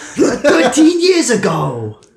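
very high, loud, sing-song swooping character voice. Voicing Gonzo Gabagool greeting the player: Gonzo Gabagool voice. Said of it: "So he's like".

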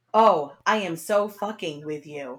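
stiff, lifeless, wooden, flat amateur delivery. Quoting a line one of the characters says, mocking it as a wooden line reading. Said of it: "it was that wooden".

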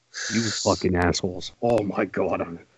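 very quiet, calm, contained fury. A podcast host, angry at guys who don't understand periods, speaks in quiet anger. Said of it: "I get quiet when I'm angry".

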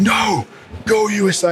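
man's high-pitched screaming yell. Telling a story about a bloke at half time, retelling a bloke screaming. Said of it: "And he screams".

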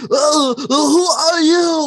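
very high, grunt-like delivery. Retelling a tv scene, the speaker quotes a character, retelling a grunted line. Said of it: "and he grunts".

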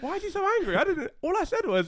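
mock innocent, very high, loud whiny tone.

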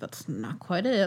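grumbling, hushed, slightly salty stage whisper. Retelling how Connor reacted to an employee's history talk: imitating Connor's salty half-whisper. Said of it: "saltedly, like, whispering".

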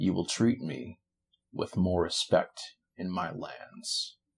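very slow, drawn-out, very quiet, hushed delivery. Game master voicing a character looking down at the player, very slowly. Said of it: "he says very slowly".

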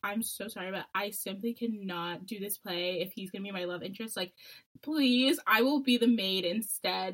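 weepy, tearful, pleading voice. Retelling begging a teacher to drop a school play role: imitating her own crying plea. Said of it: "I started crying".

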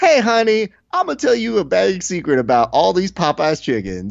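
high commercial-lady voice, like a TV ad spokeswoman. Imitating the Popeyes commercial lady telling a secret: imitating the Popeyes commercial lady. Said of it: "whoever that lady is".

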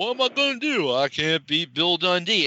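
put-on drunk voice with slurred words. Storyteller recounting a man found drunk in his driveway, Jerry Lawler mock-drunk slurring. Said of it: "he's like slurring".

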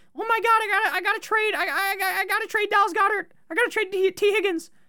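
mock frantic stuttering panic, very high pitched. Warning fantasy players not to overreact, imitating someone panicking. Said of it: "People panic".

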